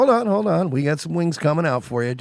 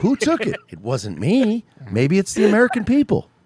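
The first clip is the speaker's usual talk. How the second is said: put-on higher-pitched mocking voice; 6 semitones higher than usual. Joking about a missing bird in a Tucker Carlson impression. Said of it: "I literally just ape Nick Mullen's Tucker impression".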